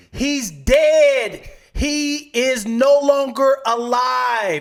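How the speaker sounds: very loud, very high, very slow, drawn-out yell. Retelling an argument where the daughter answered a question: imitating daughter yelling. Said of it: "Why are you yelling?".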